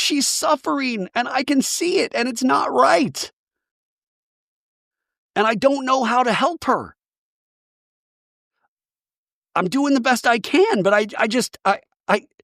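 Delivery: very high-pitched voice, crying through the words. Retelling a friend's words through tears: imitating someone crying while talking. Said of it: "while Mary's crying".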